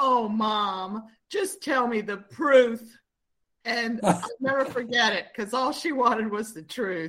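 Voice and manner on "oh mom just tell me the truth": slow, trembling little voice, "mom" drawn out. A mother retelling her daughter's plea, imitating a shaky little voice. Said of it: "her little voice, she got so shaky".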